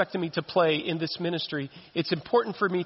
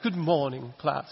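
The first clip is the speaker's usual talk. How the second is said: put-on English accent; 3 semitones lower than usual. Joking about sounding like this morning's speaker, imitating Dr. Beth's English accent. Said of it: "I'm going to speak with an English accent like that".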